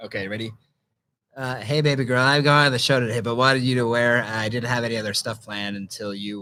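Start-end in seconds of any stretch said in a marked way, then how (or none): 1.6-6.4 low-pitched, nerdy, flirtatious voice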